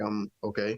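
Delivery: put-on flat monotone voice. Retelling how he finally answered the phone, imitating his monotone reply. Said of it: "He was all monotone".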